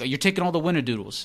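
put-on angry outburst. Retelling a scene where a guy picks a fight over cookies: imitating an angry line. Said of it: "so many times so angrily".

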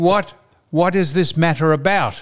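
ordinary talk, nothing marked

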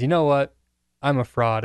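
normal talking voice

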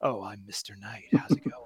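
low, dropped, suave and debonair voice. Guessing how Mister Knight will sound: suave and debonair like Poe Dameron. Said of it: "suave and debonair like Poe Dameron".

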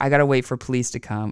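ordinary delivery

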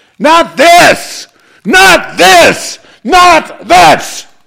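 very high, enraged, furious repeated yelling. In a conversation, the speaker protests against what is happening: angry. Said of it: "I know I'm as mad as you".

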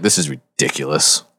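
muttered, mumbled under the breath. Walking onward with the group, a player's character is muttering to self. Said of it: "Like muttering to myself as we walk".

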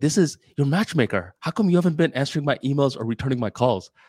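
put-on angry woman voice. Retelling a phone call from the matchmaker: imitating an angry woman. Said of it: "this really angry woman".

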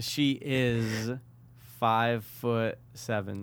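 slow delivery. Revealing a person's height to another speaker, saying it slowly. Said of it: "you said it so slow".

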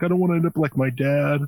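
mock tearful, weeping, high crying delivery. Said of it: "he's, like, crying during it".

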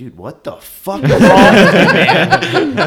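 very loud, furious angry yell, rising. Retelling a dream where he came walking up: retelling own angry words. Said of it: "I was so mad at him".

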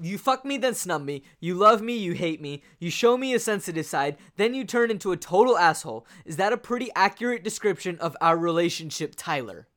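mock angry accusing rant. Retelling a film scene where Marla is pissed: imitating Marla angry. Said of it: "she is mad".

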